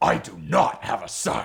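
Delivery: rough, gruff, creaky warrior delivery. Performing a favorite Star Trek: The Next Generation line, the speaker does a Worf impression. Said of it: "as performed by Worf".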